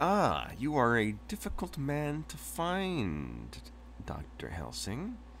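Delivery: slow, smooth, sultry voice with slight British lilt. A character addresses doctor helsing in a sultry, smooth voice. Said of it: "sultry, smooth voice".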